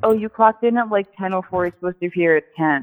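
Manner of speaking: ordinary talk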